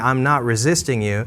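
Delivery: ordinary talk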